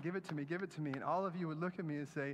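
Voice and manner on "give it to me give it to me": put-on desperate pleading, over and over. Acting out begging an object for hope and happiness: acting out desperate begging. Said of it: "I'm begging, I'm saying".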